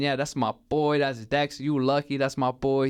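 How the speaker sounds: mock words chuckled out through laughter. Retelling what the man kept saying: imitating someone laughing while talking. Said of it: "he was just laughing, just saying".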